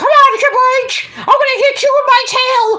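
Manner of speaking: very high, squeaky cartoonish mouse voice. Joking about a wrestling crossover, imitating Mickey Mouse. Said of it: "Mickey Mouse and, and Triple H going out like".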